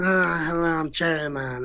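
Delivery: mobster-style character voice. Retelling a joke in the studio that made the producer laugh, do a Marlon Brando impersonation. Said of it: "I started doing a Marlon Brando impersonation".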